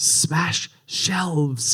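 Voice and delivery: whispering under breath. Retelling Harry secretly signalling his team: whispering under breath. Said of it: "whisper under his breath".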